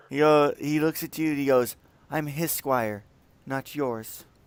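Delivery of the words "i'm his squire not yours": put-on childlike, girlish little girl voice. Voicing a squire replying to a party member: little girl voice. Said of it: "why do you sound like a little girl all of a sudden".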